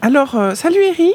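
very high put-on girl voice.

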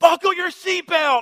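put-on, very high, shrill, loud screaming. Recounting him crying while struggling with his seatbelt, the speaker is retelling a scream. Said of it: "I literally scream".

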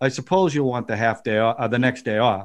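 resigned, accepting, unhostile delivery with no bite. Showing how an actor played Scrooge's line: mock-resigned Scrooge line. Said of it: "Like he wasn't trying to get at him. He was resigned".

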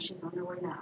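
hushed whispering voice. Retelling what a lady looking at her said: imitating a whisper. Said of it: "she's whispering".

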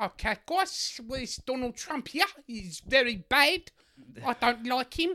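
put-on South African accent. Mocking political jokes on a late night show: put-on South African accent. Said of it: "It's like he's in the room".

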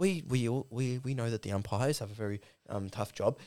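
put-on forced calm over suppressed rage, stumbling. Mocking a coach's media interview: imitating Chris Scott, barely holding in anger. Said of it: "He's like".

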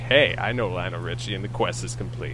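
ordinary talk, nothing marked

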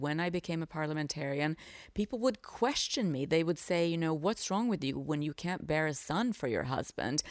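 ordinary delivery

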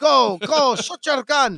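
put-on slow, high-pitched French accent. Acting out Luc Besson urging actors at a party: Luc Besson impression. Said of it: "I like that French".

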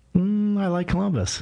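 unsure, hesitant. A guest asked by the host whether he likes his hometown, answering unsure. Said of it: "He doesn't sound so sure".

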